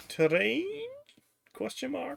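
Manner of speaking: very high, rising, querying lilt. Speaker reads a word aloud from a list, in a high questioning voice. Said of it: "He said in a high questioning voice".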